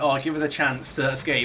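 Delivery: normal talking voice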